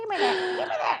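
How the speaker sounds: put-on very high, shrill, loud bickering kid voices. Imitating raccoons squabbling in a dumpster: imitating raccoons as fighting children. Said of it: "Raccoons sound like children fighting".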